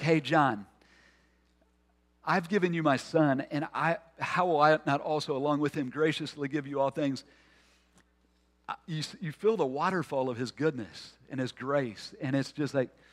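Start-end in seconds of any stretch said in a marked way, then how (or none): none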